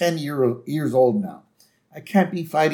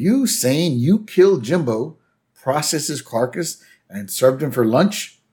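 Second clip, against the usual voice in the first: usual speaking voice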